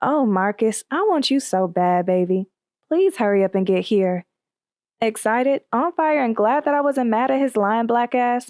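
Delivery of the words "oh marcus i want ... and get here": put-on sultry, sexy voice. Retelling a phone call to Marcus: retelling in a real sexy voice. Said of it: "in a real sexy voice".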